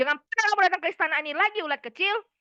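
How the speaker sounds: furious regal rebuke. Acting out a scene as a king in his palace, angry.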